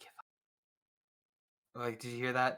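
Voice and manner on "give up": whisper, quieter. Voicing a whisper a player hears in the back of their head: whispering voice in the head. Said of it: "you just hear a whisper that says".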